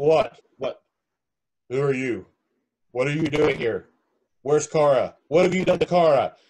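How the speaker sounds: mechanical, electronic, robotic computer voice. Game master voicing a sudden electronic voice after the players' attack. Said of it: "an electronic voice goes".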